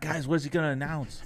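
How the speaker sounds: mock frantic, high, freaked-out panicking voice. Retelling how a dad reacted to an announcement: imitating dad freaking out. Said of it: "My dad was freaking out".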